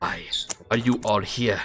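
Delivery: hushed half-whisper, close in. Voicing a hooded figure holding a dagger to a player: half-whispering. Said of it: "just starts whispering".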